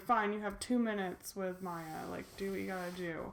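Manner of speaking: usual speaking voice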